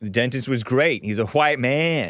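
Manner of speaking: ordinary talk, nothing marked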